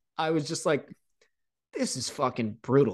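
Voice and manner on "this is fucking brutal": put-on mutter under breath, quieter. Retelling a comment made while skating to the penalty box: imitating muttering under breath. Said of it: "I literally said under my breath".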